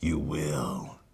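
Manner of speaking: low, hushed half-whisper muttered under the breath. Retelling a movie scene where Batman half-whispers to himself: imitating Batman half-whispering. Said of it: "Batman whispers to himself".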